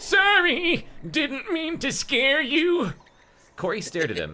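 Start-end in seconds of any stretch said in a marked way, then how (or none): 0.0-2.9 put-on elderly man voice, pitched way up and slow. Reading a story aloud, the speaker voices the startled man in an old man voice. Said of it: "I'm just gonna do our old man voice".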